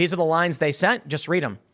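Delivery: ordinary talk, nothing marked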